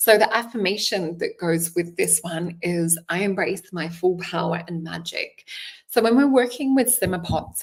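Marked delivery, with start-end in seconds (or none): none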